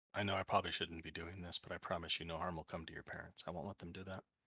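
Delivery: hushed voice. A player's character leans over to him while giving water, speaking very softly. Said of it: "very softly say".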